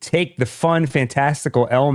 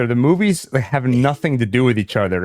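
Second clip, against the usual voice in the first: ordinary talk, nothing marked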